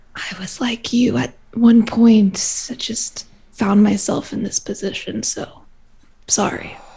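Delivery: hushed, soft, close-in whisper. Leaning in to confide in another character: whispering. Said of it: "lean in to whisper this".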